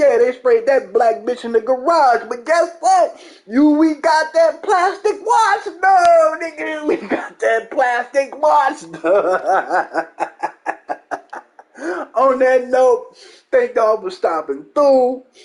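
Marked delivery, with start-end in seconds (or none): 0.0-10.1 high, slow, mocking put-on fanboy voice. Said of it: "so I can be like".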